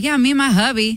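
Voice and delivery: put-on Southern accent with twang. Imagining saying a disliked word aloud in a put-on Southern accent. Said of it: "I think it's a Southern accent".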